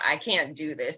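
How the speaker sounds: cracking voice. Retelling being walked down the aisle by both parents, re-enacting a cracking voice. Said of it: "My voice during like everything was just cracking".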